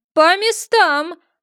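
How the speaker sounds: thunderous, high-pitched, roaring barked delivery. Narrator reads the queen's command to everyone, a thunderous bark. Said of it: "громовым голосом рявкнула королева".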